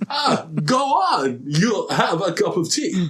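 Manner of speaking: put-on full, slow Irish accent. Joking about an actor's Irishman role in a new film, imitate Christopher Walken's Irish accent. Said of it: "he does a pitch perfect Irish accent".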